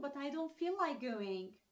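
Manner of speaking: usual speaking voice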